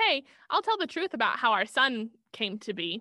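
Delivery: ordinary delivery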